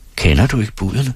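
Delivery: ordinary delivery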